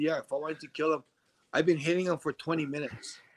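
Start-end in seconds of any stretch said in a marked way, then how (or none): none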